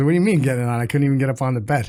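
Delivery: ordinary talk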